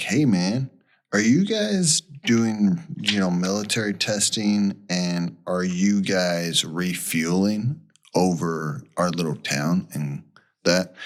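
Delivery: normal talking voice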